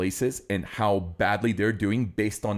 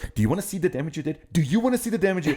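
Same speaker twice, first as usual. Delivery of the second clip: put-on scolding, telling-off tone; 8 semitones higher than usual. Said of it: "like, you would scold".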